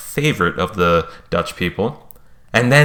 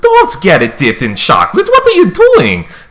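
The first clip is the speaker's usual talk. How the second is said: put-on very high, loud, sing-song Dutch accent; 11 semitones higher, 7 dB louder than usual. Retelling what a woman in line said to him, in a dutch accent impression. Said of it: "That's my Dutch impression".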